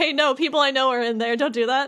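play-acted alarmed, panicking tone. Recounting a scene where Leon watches people he knows in danger, imitating Leon panicking. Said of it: "Leon's panicking as he's like watching".

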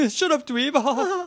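mock posh, affected accent. Retelling a line from the episode: Skull's highfalutin accent. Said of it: "the highfalutin accent".

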